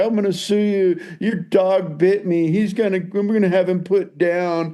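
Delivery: blubbering, tearful voice. Retelling a bitten skater's threat to sue: imitating someone crying. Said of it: "He started crying and was like".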